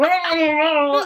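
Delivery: very high, drawn-out, motorboated voice. Retelling a phone call, the speaker imitates the man on the line: imitating a voice being motorboated. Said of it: "He's like talking like this because he's getting motorboat".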